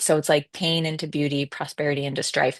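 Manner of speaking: ordinary talk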